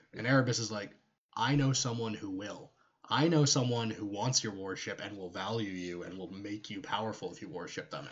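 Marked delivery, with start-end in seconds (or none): none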